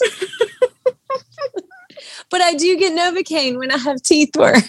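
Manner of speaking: high-pitched laugh-crying. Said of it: "I'm crying".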